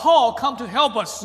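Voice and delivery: plain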